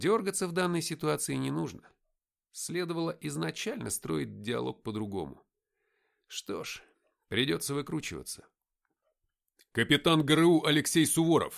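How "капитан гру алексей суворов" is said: booming, very loud, firm delivery. Kneeling at a sergeant's gunpoint, the narrator speaks up, loudly. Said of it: "громко сказал я".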